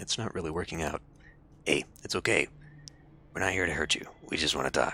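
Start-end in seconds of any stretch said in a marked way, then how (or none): 1.7-5.0 gravelly, comforting tone, much lower. A man kneels beside a woman to reassure her: gravelly, trying to sound comforting. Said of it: "with his gravelly timbre".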